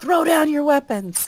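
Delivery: very high, threatening, intimidating shout. Voicing a character who threatens a foe with a shotgun: intimidating shout. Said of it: "shout instead".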